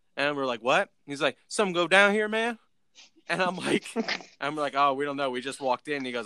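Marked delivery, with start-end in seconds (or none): 1.5-2.6 put-on Southern drawl, much higher. Retelling what a guy who walked up asked, Boomhauer-style Southern drawl. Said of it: "you got some Boomhauer characters".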